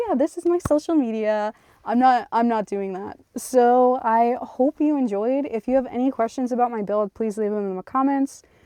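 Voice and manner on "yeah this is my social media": put-on, fake super-nice service voice, pitched up. Showing the super nice act the speaker refuses: put-on server voice. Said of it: "put on a server voice and be like".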